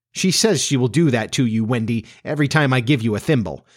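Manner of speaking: ordinary delivery, nothing marked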